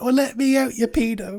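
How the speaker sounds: acted-out pleading voice of a young boy. Retelling how a boy locked in a cupboard banged on the door: imitating a boy banging from inside a cupboard. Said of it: "banging on the door from the inside".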